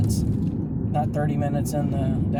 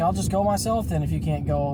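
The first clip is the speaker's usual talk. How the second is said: ordinary talk, nothing marked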